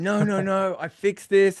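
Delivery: imitated raging voice. Retelling how a player reacted to analysis: imitating a player in a rage. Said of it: "he just went into a rage".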